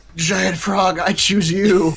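whispering in a character voice. Voicing a character who pulls out a frog: whispering in character. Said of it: "and whisper".

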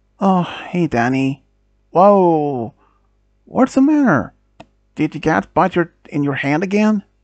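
ordinary delivery

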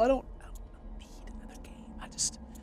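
whispered.

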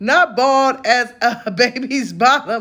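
slow, fighting off laughter, held back. Reading a comment aloud to the audience, trying not to laugh. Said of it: "I'm trying not to laugh".

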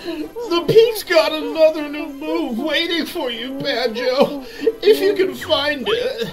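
very high, whiny, teary crying voice. Playing a game, the speaker reads a character's line to the player in a whiny voice. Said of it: "absolutely hates that whiny voice".

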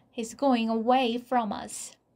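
ordinary delivery

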